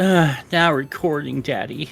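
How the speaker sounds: put-on sexy, sultry, seductive voice. Imagining the recording bot announcing itself: sexy sultry Craig bot voice. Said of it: "a really sexy, sultry voice".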